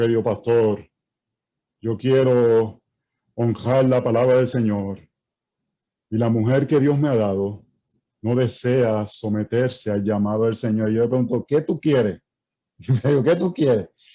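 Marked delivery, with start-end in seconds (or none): 0.0-10.9 mock-spiritual, pious-sounding man's voice, lower, slower. Acting out how a husband speaks to the pastor, in a mock-spiritual husband voice. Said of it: "cambia la voz así todo".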